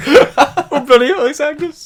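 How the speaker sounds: high, loud, mock sexually excited voice. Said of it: "Why did you sound slightly, like, sexually excited?".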